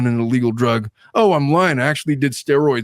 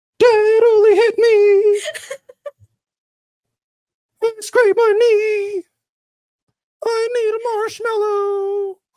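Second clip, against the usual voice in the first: put-on very high, very slow small-child voice. Reacting to a played clip, imitating a little child. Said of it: "that sounds like my four-year-old daughter".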